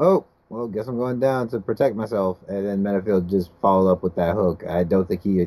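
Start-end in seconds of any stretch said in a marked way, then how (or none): none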